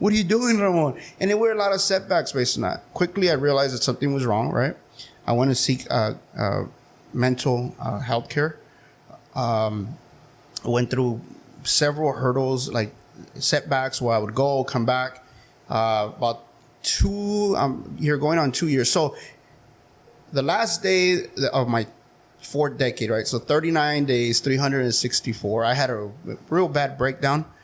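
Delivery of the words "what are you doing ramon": high, upset scolding tone. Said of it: "My wife would get so upset".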